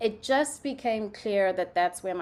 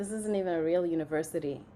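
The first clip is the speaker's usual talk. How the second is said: fast, whispered put-on voice. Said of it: "my parents were like".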